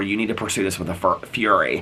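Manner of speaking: ordinary talk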